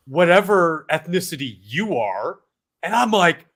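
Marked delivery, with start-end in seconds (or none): 0.1-2.4 mock scornful, derisive, dismissive throwaway delivery. Retelling a TV host's remark to a guest: imitating Don Lemon, derisive. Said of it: "he says to him derisively".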